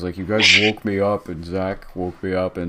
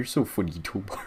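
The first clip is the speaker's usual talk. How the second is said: put-on stupid-sounding man's voice, quieter; 7 dB quieter than usual. Act out how Chris would answer Tobar's joke, as Chris doing a stupid voice. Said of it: "Is that what Chris sounds like?".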